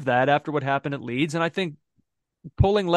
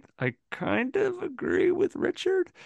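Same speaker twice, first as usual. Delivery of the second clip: high, soft, grudging, through clenched teeth. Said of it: "I kinda say this through clenched teeth".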